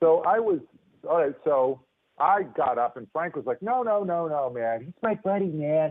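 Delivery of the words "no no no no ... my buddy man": easygoing, laid-back surfer dude voice. Retelling how Frank, a much older man, stood up for his buddy, in Frank's surfer dude voice. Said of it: "he sounded like a surfer dude".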